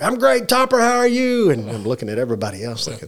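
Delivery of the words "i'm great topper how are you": mock full-on shout, loud and very high. Retelling a greeting at the door, Dave Tierney yells back to Topper: retelling his yell. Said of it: "Dave yells back".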